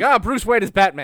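high, loud blurted delivery. Joking that the butler gives in at the sight of a needle: imitating Alfred blurting a secret. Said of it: "They just show him the needle, and it's like".

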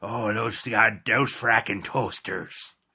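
slow, drawn-out, stretched Midwestern accent. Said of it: "he's Midwestern, you know, so you gotta go".

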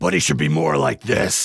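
hoarse, gravelly, rough growling voice.

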